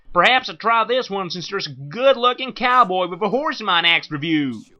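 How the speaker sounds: put-on Texan accent. A reviewer trying out accents for viewers, in a Texan accent. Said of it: "this is my best Texan accent".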